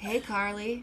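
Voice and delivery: mock suave, swaggering voice. Retelling how Greg waltzes in and greets people: smooth, swaggy Greg impression. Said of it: "So smooth".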